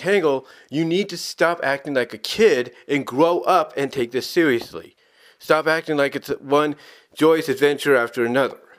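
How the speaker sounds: ordinary talk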